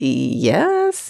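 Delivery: put-on hesitant, unsure, doubtful yes. Retelling how a suspect answered: imitating an unsure yes. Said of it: "he questionably affirms".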